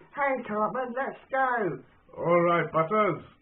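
failed high, slow cartoon kid voice. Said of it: "You tell I can't do the voice".

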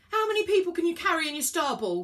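loud yell. Elliot yells to Virgo as the train speeds through a station: yelling. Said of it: "He yelled".

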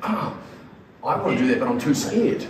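ordinary delivery

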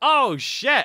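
shouting. Reacting suddenly to something while playing: shouting. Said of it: "Sorry for shouting".

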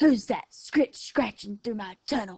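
quick, fast growling coyote voice. The coyote hears someone coming through his tunnel, growled. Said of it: "growled the coyote".

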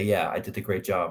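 ordinary talk, nothing marked

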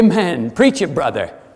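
big, loud fisherman-voice call. Preaching, imagining the apostle Peter answering aloud: Peter's big booming fisherman voice. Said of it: "in his big booming fisherman voice".

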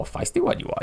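bad put-on little alien sage voice. Greeting someone in chat with a quick terrible Yoda impression. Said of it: "That's terrible. I won't do that again".

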